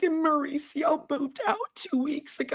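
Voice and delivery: high, fake-weepy put-on crying voice. Retelling a line Kyle says, imitating Kyle fake crying. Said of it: "when she fake cries like this, and she just makes her voice like this".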